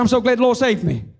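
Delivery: words tumbling out in a rapid, rattled-off rush. Retelling standing up at an aunt's urging, imitating rushed speech. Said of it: "I said it so fast".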